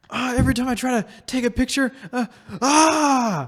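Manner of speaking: play-acted, very high, loud yelling. Retelling a video of a man at his phone: imitating a man yelling. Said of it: "yelling so loud that the camera microphone".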